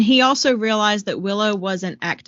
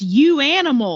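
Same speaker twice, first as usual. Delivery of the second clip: shout blurted out, pitched higher; 6 semitones higher than usual. Retelling a scene where a character is pushed to the edge, retelling a shout. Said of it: "he just shouts".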